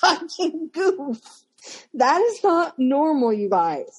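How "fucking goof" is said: half-hearted, mild shouted insult. Retelling what a grown man yelled on Facebook: imitating someone yelling. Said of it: "masturbating while yelling".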